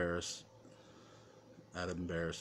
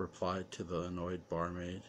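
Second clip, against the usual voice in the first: plain reading voice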